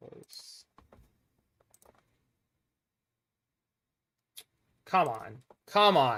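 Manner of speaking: irritated. Player whose computer is lagging mid-game, urging it on, annoyed. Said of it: "I'm getting annoyed with this".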